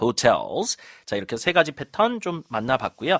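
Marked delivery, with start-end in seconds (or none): 0.0-0.8 hotels with the weight on the second syllable -tels. English vocabulary lesson on word stress, stress on second syllable of hotels. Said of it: "강세 뒤에다 주시는 단어입니다".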